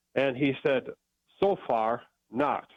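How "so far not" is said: put-on Austrian accent. Retelling what an Egyptologist answered: imitating an Austrian accent. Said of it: "in his Austrian accent".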